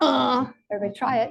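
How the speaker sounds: ordinary delivery, nothing marked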